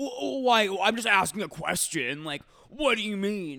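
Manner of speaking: high, very loud, super defensive outburst. Retelling her partner's reply when she questioned his question, mock super-defensive. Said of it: "he gets super defensive and he's like".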